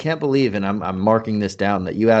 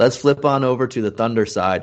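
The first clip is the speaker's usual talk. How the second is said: ordinary talk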